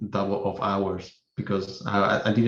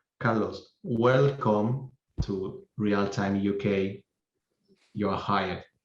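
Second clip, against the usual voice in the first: very drawn-out, super slow, deliberate word-by-word delivery; 3 dB quieter than usual. Retelling what a man said to him on a call: Peter Leonard, super slow. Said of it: "I'm gonna say this super slow".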